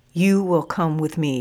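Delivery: ordinary delivery, nothing marked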